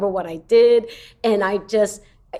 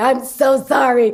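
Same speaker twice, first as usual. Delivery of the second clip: put-on laughing while speaking; 3 semitones higher, 3 dB louder than usual. Retelling apologizing after blowing an audition: retelling laughing while apologizing. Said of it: "laughing and going".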